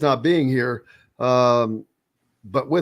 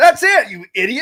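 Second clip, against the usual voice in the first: acted furious tone, very high-pitched and loud; 11 semitones higher, 6 dB louder than usual. Retelling talking to oneself out loud while golfing: imitating angry self-scolding. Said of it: "I was so mad at myself".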